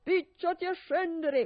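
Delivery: loud, bellowed yell. Bluebeard yells up at his wife from below. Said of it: "urlava Barba Blu".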